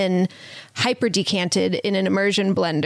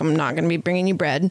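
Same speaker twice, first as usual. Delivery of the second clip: put-on flat, matter-of-fact tone, lower; 3 semitones lower than usual. Retelling someone refusing a request for bread: imitating a matter-of-fact refusal. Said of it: "very matter-of-factly".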